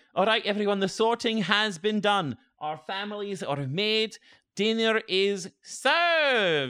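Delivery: attempted Scottish accent, pitched way up high. In a role-play game, the speaker voices the professor addressing everyone: Professor Walters, attempted Scottish accent. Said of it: "the Scottish one talking in the front. Yeah. Like, I'm trying to do a Scottish accent talking in the front. ... I'm trying to do a Scottish accent talking in the front".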